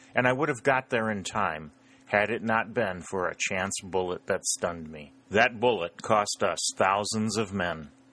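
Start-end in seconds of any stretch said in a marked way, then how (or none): none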